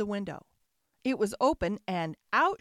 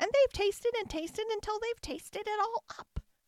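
very high, squealing voice; 11 semitones higher than usual. Narrator reads the baby bear finding his porridge eaten, squealing. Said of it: "squealed the baby bear".

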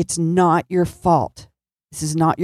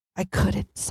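very quiet voice, higher and quieter; 3 semitones higher, 7 dB quieter than usual. Retelling a late-night phone call and the caller's words: really quiet voice. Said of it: "I hear this really quiet voice".

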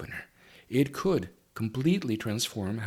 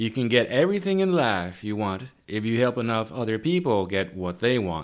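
loud Southern US drawl; 5 dB louder than usual. Host reading a quote aloud, in a southern drawl. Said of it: "There's my southern drawl for you".

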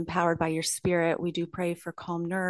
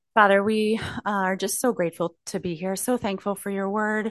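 winded, out of breath, words between breaths; 2 semitones higher, 4 dB louder than usual. Praying for Rachel just after running up the stairs, out of breath. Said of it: "I'm out of breath".

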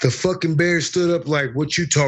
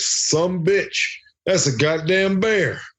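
put-on drawled Tennessee accent; 4 semitones higher than usual. Retelling his own reaction to seeing a bear: imitating his own Tennessee drawl. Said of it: "I channeled my inner Tennessee".

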